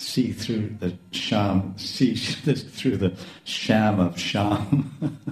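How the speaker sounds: very slow, drawn-out, playful, laughing drawl.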